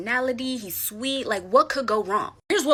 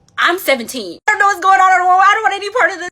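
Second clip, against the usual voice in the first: frightened, blurted scream, very high and very loud; 10 semitones higher, 13 dB louder than usual. Retelling own reply when the wife asked who they were: imitating own past scream. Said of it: "I just automatically screamed my age".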